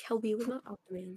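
muttering. Mumbling an aside during a group chat, so someone asks about it: mumbling. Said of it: "What are you mumbling about?".

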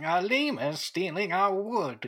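put-on elderly voice. Repeating an earlier phrase on request: old man voice. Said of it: "Say it in the old man voice again".

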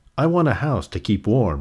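ordinary delivery, nothing marked

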